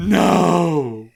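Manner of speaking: loud yelling. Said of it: "Dude, stop yelling".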